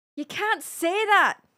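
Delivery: amateur Irish accent. Trying the only thing they can do in an Irish accent, attempted Irish accent. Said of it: "The only thing I can do in an Irish accent is".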